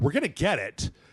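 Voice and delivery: indignant, offended, affronted tone. Retelling how he answered a show host's question: imitating an indignant reply. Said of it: "he got really indignant".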